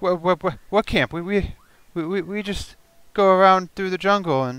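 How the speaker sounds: frightened stammer. Game master voicing a survivor questioned about his camp, scared stammering. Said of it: "He's scared to death right now".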